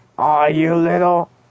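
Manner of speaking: high, angry cartoon-dad voice, furious outburst. Joking about strangling someone like Homer does Bart: Homer Simpson voice. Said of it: "a Homer to Bart Simpson".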